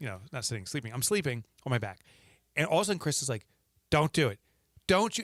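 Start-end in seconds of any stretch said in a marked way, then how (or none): 3.9-5.2 put-on yelling as if asleep. Retelling being yelled at by Chris talking in her sleep: imitating Chris yelling in her sleep. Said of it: "Yells, yelling".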